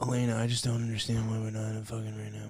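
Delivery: soft, lifeless, level, flat monotone. Speaker shows friends how Elena's ex-boyfriend on the show always talks, imitating Elena's ex-boyfriend. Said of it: "this is his tone of voice always".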